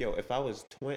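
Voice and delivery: ordinary talk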